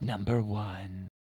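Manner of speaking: hushed, very soft, creepy British voice. Speaker imitates a countdown-video host, in a creepy effeminate British voice. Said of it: "he does it always in a creepy British voice".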